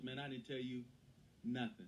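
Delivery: ordinary talk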